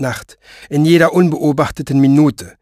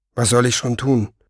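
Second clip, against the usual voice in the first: usual speaking voice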